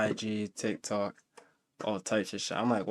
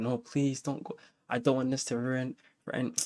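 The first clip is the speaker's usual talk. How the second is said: put-on crying, tearful pleading tone; 2 semitones higher, 4 dB quieter than usual. Retelling how his crying girlfriend begged him: imitating someone crying. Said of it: "I can hear the tears in her voice".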